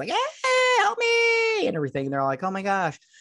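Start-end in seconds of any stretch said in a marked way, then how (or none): 0.1-1.7 put-on very high, shrill, girlish squealing cry. Retelling a story where a boy hangs from curtains, retelling a little-girl scream. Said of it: "he screams like a little girl".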